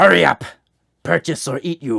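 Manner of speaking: very loud, botched, bad alien creature voice. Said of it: "I can't do a skirmisher voice".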